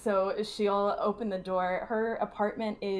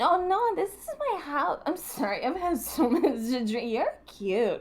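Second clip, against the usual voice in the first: put-on heavily drunk, sloppy, high-pitched rambling babble; 6 semitones higher than usual. Playing a character faking drunkenness to draw a man's attention: acting horribly drunk. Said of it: "as if she is horribly drunk".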